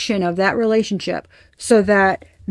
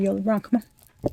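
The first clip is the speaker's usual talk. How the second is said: arrogant, big-headed, cocky swagger, low-key and soft; 7 dB quieter than usual. Imagining acting like a big shot after winning the lottery, mock-cocky. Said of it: "I'm gonna act like I'm the shit".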